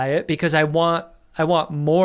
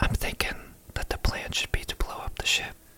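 very hushed, barely-there, scheming whisper. Retelling a character's plan to blow up the ship: imitating a very hushed tone. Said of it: "in a very hushed tone".

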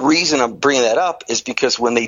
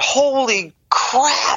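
acted-out, very high, sudden shrieked scream; 12 semitones higher than usual. Retelling how a test attendant screamed in the middle of a lung test: imitating someone screaming. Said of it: "he screamed out".

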